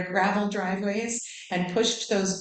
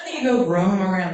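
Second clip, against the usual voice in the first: raised, paternal-sounding voice; 6 dB louder than usual. Repeating a father's line to the audience: Jimmy Stewart voice. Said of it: "Just think Jimmy Stewart".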